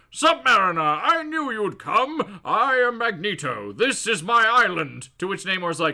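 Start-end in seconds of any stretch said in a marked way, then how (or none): 0.2-5.1 slow, unhurried, deliberate, weighty delivery. Retelling a comic scene, voicing Magneto greeting Namor. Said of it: "he's like".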